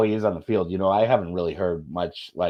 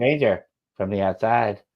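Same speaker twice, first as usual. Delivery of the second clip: convincing little space-alien toy voice. Repeating a line from Toy Story: Toy Story alien voice. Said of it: "You're actually really good at that".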